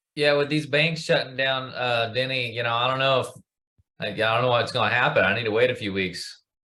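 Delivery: put-on, laid-on New England accent. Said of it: "Boy, I like that accent".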